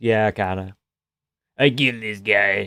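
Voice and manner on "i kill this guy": put-on tough-guy voice, forced low and gravelly. Mocking a fighter's way of talking: Hamzat Chimaev's forced gravelly voice. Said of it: "forced, gravelly voice he does".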